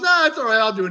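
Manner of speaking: high put-on voice.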